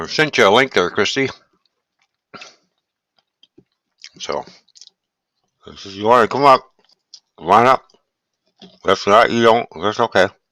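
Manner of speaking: speaking with mouth full. Inviting a viewer to come up, talking with mouth full. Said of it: "Don't mean to talk with my mouth full".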